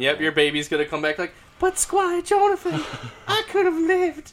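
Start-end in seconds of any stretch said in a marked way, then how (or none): 1.6-4.3 very high, drawn-out damsel-in-distress pleading voice. Voicing a baby addressing Squire Jonathan, damsel in distress voice. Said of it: "Why are you sounding like a damsel in distress?".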